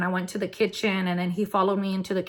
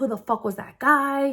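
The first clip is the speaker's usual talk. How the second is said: put-on yelling voice, higher pitched; 5 semitones higher than usual. Retelling how someone came out and yelled: imitating someone yelling. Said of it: "he started yelling at me".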